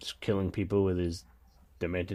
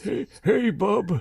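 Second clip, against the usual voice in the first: put-on very high-pitched, very old man voice; 13 semitones higher than usual. Mocking the idea of older actors in the cast, doing an old man Logan voice. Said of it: "we don't need an old old man".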